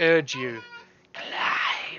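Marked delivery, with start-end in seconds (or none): 1.1-2.0 slithering whisper, much quieter. As the game master describes a charging horde, a voice urges the player on in a slithering whisper. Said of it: "you hear a slithering whisper".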